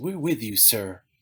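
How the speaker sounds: soft, keen machine-like voice. Retelling what the family computer said: imitating GB's enthusiastic computer voice. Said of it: "in his very enthusiastic, soft-spoken computer voice".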